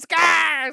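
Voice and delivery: all-out shrill, very loud, high excited screaming. Retelling coming down the stairs in the crowd, imitating own past scream.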